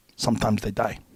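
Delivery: put-on heavy Korean accent. Retelling what an intense man said after a scary incident, thick Korean accent. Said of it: "with his thick Korean accent".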